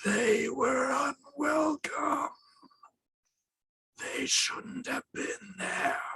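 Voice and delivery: muffled, hushed, soft, very high voice. A voice speaks from inside the house, in a muffled voice from inside. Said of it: "you hear a muffled voice come from inside".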